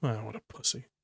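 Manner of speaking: soft muttered aside under the breath. Voicing Tex reacting to a crying companion: muttering under her breath. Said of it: "muttering under her breath".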